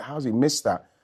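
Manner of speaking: ordinary delivery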